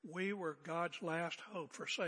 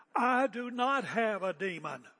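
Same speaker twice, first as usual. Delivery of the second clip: put-on flustered, agitated, defensive tone, higher, louder; 5 semitones higher, 11 dB louder than usual. Acting out a defensive denial the speaker says was not given: mock flustered defensive protest. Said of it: "gets all sweaty".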